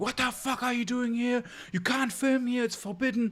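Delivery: put-on very high-pitched shrieking outburst. Retelling how a staring man confronted them for filming: imitating someone screaming. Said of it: "suddenly he starts screaming".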